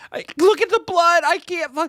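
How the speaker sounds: mock very high, sobbing, hysterical crying wail. Retelling a friend's reaction to a bleeding man: imitating Brenna crying hysterically, yelling. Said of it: "Brenna starts crying hysterically, yelling".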